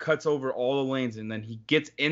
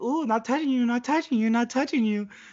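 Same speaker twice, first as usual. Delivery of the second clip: put-on very high, childish little-kid teasing tone; 10 semitones higher than usual. Retelling someone teasing the driver: imitating a teasing little kid. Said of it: "being like a little kid".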